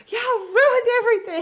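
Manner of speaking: shrill, very high, very loud, furious hollering. Retelling yelling at the kids who woke early at christmas: imitating her own mad yell. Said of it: "But I was so mad".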